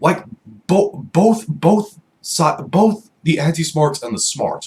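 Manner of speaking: stuttering, repeating the same word. Speaker talking about wrestling fans and wrestlers, stuttering. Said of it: "sorry for my stuttering".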